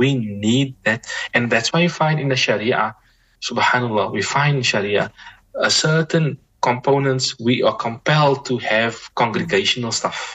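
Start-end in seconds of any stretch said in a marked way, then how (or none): 0.0-1.0 "we need that" said slowly with heavy emphasis. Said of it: "I emphasize this word".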